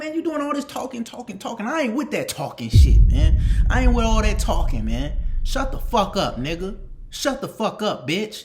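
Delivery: put-on heated, angry tone. Retelling snapping back at a teammate who kept roasting him: imitating his own heated retort.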